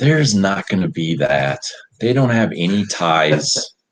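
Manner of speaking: very heavily sarcastic tone. Answering a co-host's question about foreign influence: sarcastic. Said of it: "said sarcastically as heck".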